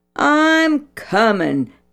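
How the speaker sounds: high-pitched voice. One friend answers another calling him home, retorting. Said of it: "Danny retorted".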